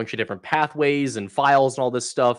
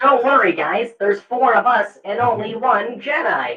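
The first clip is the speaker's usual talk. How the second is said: robotic droid voice, pitched higher; 11 semitones higher, 4 dB louder than usual. Showing the other speakers a Star Wars Battlefront droid voice. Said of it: "experimenting with the droid voice".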